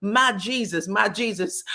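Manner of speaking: very slow, drawn-out, pained crying out. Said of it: "she was hollering".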